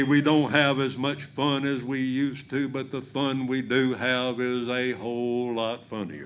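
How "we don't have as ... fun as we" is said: ordinary delivery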